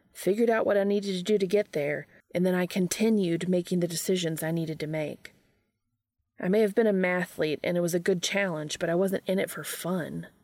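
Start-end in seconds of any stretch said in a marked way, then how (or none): none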